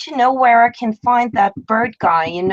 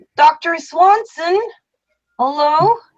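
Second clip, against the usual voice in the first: high, shouted calling out; 7 semitones higher than usual. In a role-play scene, walking up to reception and calling for the doctor, shouting. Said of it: "I immediately shout".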